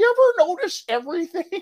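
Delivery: way up high and loud. Retelling a radio interview's impression: Paula Poundstone impression. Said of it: "he did a Paula Poundstone impression".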